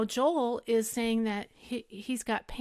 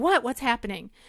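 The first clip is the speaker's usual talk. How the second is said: put-on frantic voice, louder; 4 dB louder than usual. Retelling coming out in her robe: imitating her own frantic self. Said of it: "in a frantic".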